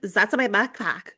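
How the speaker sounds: play-acted, taunting, mocking parroting echo. Retelling how the guy who stole her backpack echoed her, retold mocking imitation of her. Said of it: "Like just mocking her back".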